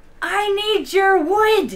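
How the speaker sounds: loud, slow, drawn-out yell.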